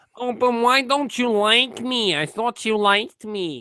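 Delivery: put-on, very flamboyant camp American accent.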